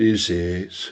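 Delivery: put-on gloomy, mopey donkey voice. Acting out the gloomy inner voice: Eeyore voice.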